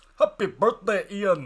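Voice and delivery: loud, high, jokey put-on Scottish accent. Wishing a friend in Scotland happy birthday: put-on Scottish accent. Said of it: "we should say it in Scottish".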